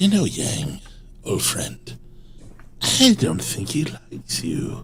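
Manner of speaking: soft, slow whispering. While they drive, speaking to Yang, whispering. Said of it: "I whisper to Yang".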